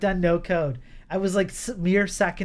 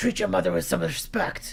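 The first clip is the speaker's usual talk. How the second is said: put-on raspy voice. Voicing the mom again after a question about the voice: Marge Simpson voice. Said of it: "Why does she sound like Marge?".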